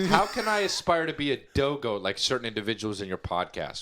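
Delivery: plain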